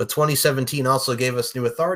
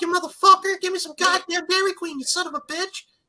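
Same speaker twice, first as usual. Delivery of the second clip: very high, angry ranting voice. Showing the others on the show what he sounds like, doing a Jim Cornette impression. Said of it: "That's what he sounds like".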